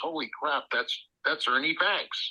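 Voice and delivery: ordinary talk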